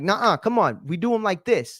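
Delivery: put-on stern, firm scolding tone. Retelling coaching kids on push-ups: imitating scolding kids firmly. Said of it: "not yelling at them, but, like, getting on them".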